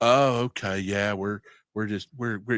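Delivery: mock snobbish, dismissive brush-off tone. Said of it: "just straight snobbed us".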